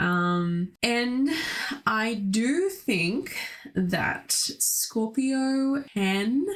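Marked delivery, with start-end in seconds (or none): 3.7-6.4 can stressed hard, said high and slow. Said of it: "emphasis on the word can".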